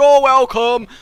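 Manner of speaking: silly, shrill talking-claw voice, very high and loud. Speaker acts out a grabbing claw answering a thank-you: talking claw voice. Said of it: "because the claw has that voice".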